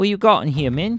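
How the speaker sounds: very high-pitched character voice. Rooting through someone's stuff, the speaker puts on a Korg voice. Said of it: "Now I'm doing like a Korg voice".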